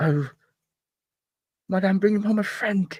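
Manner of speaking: high, muffled mutter, as if mouth covered. Speaker retells a man talking with a pamphlet to his mouth: muffled muttering. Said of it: "he just mutters like with the pamphlet to his mouth".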